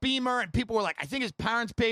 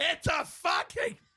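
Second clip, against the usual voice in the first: acted-out mock scream, much higher in pitch; 7 semitones higher than usual. Retelling how a man covered the phone and yelled at the secretary, retelling a scream. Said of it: "scream at the secretary and go".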